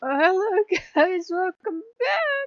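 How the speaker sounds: crying, very high voice. Greeting viewers at the start of a video, crying while talking. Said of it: "Okay, I'm crying".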